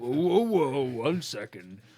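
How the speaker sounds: booming big-guy voice, very loud and high-pitched. Voicing the Goliath stopping a charging fighter: voicing the Goliath. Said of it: "the Goliath puts his hand on his shoulder, like".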